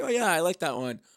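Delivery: ordinary delivery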